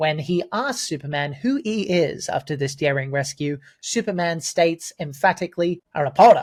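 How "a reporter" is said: booming, loud, not-great put-on New York accent. Quoting a comic-book hero's reply, in a put-on New York accent. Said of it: "That's my New York accent".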